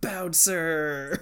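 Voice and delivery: brash, high, loud shouting. Retelling a cartoon scene, imitating Frosta shouting. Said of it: "Frosta going around just like".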